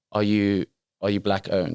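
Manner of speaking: ordinary talk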